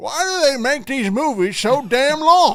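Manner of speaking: put-on loud, high, cranky, grumpy old-man grumble. Retelling what another speaker said before the show: imitating a grumpy old man rant. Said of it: "That's exactly what you sounded like".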